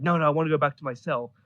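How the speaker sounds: ordinary talk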